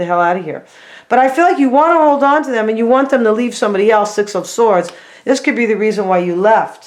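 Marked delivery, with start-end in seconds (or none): none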